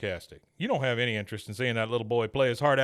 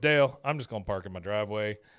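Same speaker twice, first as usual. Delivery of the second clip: normal talking voice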